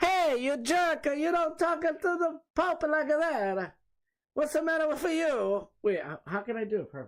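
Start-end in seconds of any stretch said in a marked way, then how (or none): 0.0-5.7 pitched way up, very high video-game character voice. Doing an impression after saying they want to do Mario: Mario impression. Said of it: "I just wanna do my Mario impression".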